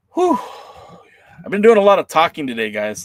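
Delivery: a little out of breath. Speaker addresses viewers after a lot of talking today: a little winded. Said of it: "Sorry if I sound a little winded".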